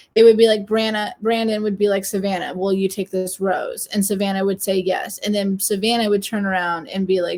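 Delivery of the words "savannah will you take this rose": normal talking voice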